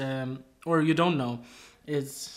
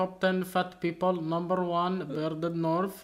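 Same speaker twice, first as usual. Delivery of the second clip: heavily laid-on put-on Indian English accent; 3 semitones higher than usual. Recording at home with Ricky, in a put-on Indian accent. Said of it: "Why do you sound like an Indian?".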